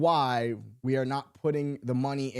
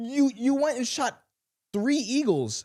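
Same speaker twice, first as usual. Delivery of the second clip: ordinary talk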